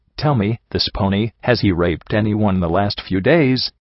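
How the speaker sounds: plain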